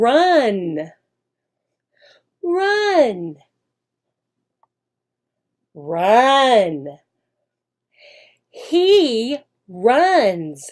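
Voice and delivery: very slow, drawn-out, word-by-word teaching voice. Teacher showing how to teach the word run to young children: very, very slow speech. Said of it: "See how slowly I'm speaking there?".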